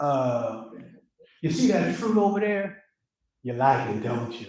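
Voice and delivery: coaxing, sweet-talking, smooth, flirtatious voice. Acting out a story scene in character: flirtatious tempter character. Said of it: "let me get in character".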